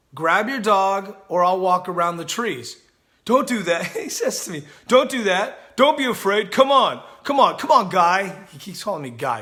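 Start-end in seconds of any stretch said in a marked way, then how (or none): 4.9-8.4 loud, strange, odd coaxing voice. Retelling what a dog owner kept saying to him; weird voice. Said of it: "this in this weird voice".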